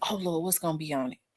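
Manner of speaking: acted-out flustered, panicky fretting, soft. A student describes seeing a philosophy quiz coming, retelling own panic. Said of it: "I start panicking. Like".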